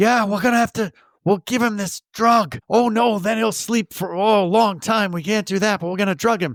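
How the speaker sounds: high, loud stage whisper. Retelling characters plotting to drug someone: imitating a stage whisper. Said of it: "They're saying in that stage whisper".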